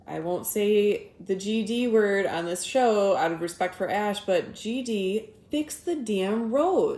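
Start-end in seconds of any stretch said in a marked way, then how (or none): 4.2-7.0 put-on heavy, thick Midwestern accent. Saying the line every Michigander says: heavy Midwest accent. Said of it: "in our most heavy Midwest accent".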